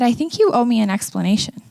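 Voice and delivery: ordinary talk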